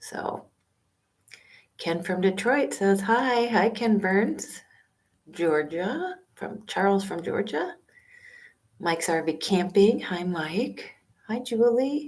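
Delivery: soft, unhurried, hushed half-whisper. Speaker live from a public library greets viewers by name, half-whispering. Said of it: "So sorry if I'm kind of whispering".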